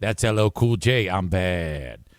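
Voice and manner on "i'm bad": put-on old-style radio announcer delivery. Redoing the line from his old radio show: imitating his old radio DJ voice. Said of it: "if I try to do that voice that I'm doing there".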